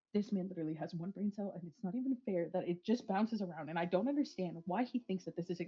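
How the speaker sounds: muttering to herself. A player voicing their character as she turns toward the cave entrance, muttering to herself. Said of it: "she's just muttering to herself".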